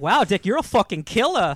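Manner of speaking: put-on just a slight touch of Boston accent. Quoting a TV character taunting Dick: Bruce Wayne with slight Boston accent. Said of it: "He's got a slight Boston accent at times".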